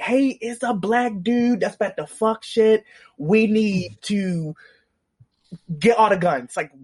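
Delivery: put-on frightened, scared, panicky, urgent voice. Retelling a character warning everyone to arm up: imitating Loki sounding scared. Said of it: "I've never seen Loki so scared".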